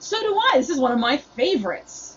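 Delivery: chipper, upbeat, bright, sing-song cheery tone. Retelling their own reply to a condescending theater goer: imitating own cheerful reply. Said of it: "My cheer is throwing him off".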